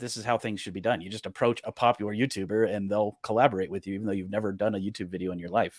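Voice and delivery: plain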